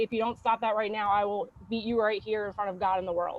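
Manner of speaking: hushed, very quiet, threatening murmur. Retelling a mother leaning in with a warning: imitating mom speaking real quiet. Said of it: "real quiet and just say".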